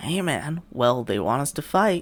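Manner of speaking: put-on swooping voice, slow pace. Quoting a fighter before their fight, imitating Terrence McKinney. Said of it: "he doesn't talk like that".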